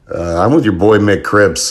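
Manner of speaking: ordinary delivery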